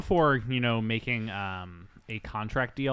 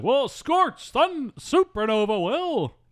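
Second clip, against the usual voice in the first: over-the-top, very high, loud, slow goofy voice; 14 semitones higher, 7 dB louder than usual. Quoting the hero's reply the way the actor plays him: Brendan Fraser goofball voice. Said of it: "that's how Brendan talks in this movie".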